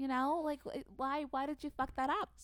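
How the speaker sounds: attempted Long Island accent, then lost. Trying an accent that changes halfway through, a put-on Long Island accent that slips. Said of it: "I was going for Long Island and then I lost it".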